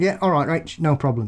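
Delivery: plain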